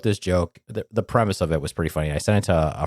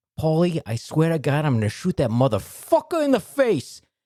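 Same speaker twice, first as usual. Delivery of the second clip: put-on pitched-up Italian-American accent; 11 semitones higher than usual. Acting out a joke about a gangster talking to his dog: stereotypical italian accent. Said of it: "Just the most textbook stereotypical Italian accent".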